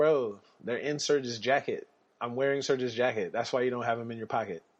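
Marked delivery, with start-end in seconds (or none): none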